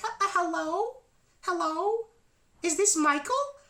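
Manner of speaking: very high, strange, slow, drawn-out voice. Retelling a phone call, imitating the person who picked up with a high-pitched weird voice. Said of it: "with the high pitched, weird voice".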